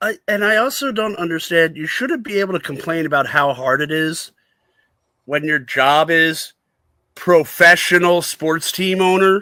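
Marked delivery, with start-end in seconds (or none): 7.1-9.4 "professional" stressed, stretched out slow and loud. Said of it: "emphasis on the professional".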